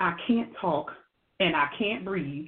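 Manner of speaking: faint whisper, words barely getting out. Retelling what a sick friend said on a video call: imitating a whisper. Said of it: "she said in a whispering tone".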